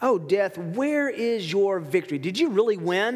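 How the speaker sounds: put-on mocking, taunting tone. Reading Paul's words that mock death aloud: imitating a mocking tone. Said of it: "there's a mocking tone that Paul speaks".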